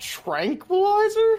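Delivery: very high, loud, astonished cry. Playing a character who sees a giant bird, surprised. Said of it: "look at that thing surprised and be like".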